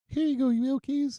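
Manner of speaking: very high, unconvincing attempted girly voice. Quoting a woman who became my knight in shining armor: imitating a woman's voice. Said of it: "I could do her voice. Let me see".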